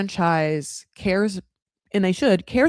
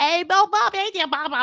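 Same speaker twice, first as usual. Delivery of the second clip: exaggerated Cockney accent pitched way up; 11 semitones higher than usual. Guessing what Claire would say to Bob, in her crazy Cockney accent. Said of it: "in her cr- crazy Cockney accent".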